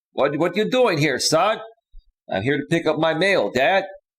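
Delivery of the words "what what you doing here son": put-on big, thick, heavy Greek accent. Retelling running into his dad, the speaker imitates him with a thick Greek accent. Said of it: "with this big, thick Greek accent".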